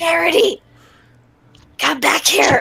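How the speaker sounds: high-pitched shouted whisper, calling out. Calling a companion back while guards are around, whisper-shouting. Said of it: "I'm whisper shouting".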